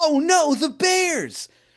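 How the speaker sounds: acted, very high, slow, drawn-out freaked-out dismay. Retelling how someone reacts to finding honey on the walls: imitating someone freaked out. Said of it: "really freaked out".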